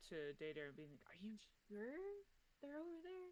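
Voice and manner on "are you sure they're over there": hushed voice at a very high pitch. A player's character calls out to a companion in the trees, hushed call. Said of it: "do like a hushed call out".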